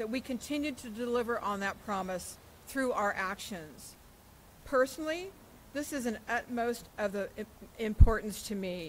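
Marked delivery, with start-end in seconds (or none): 4.6-8.9 emotional, stuttering, stammering, overcome with feeling. Speaking for the Board of Airport Commissioners, the speaker turns personal: stuttering with emotion. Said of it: "You hear I'm stuttering because I get so emotional about it".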